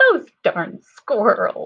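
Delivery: goofy, very loud, daft silly voice. Reading aloud, trying the title in different voices, silly voice. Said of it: "Can you sound silly next?".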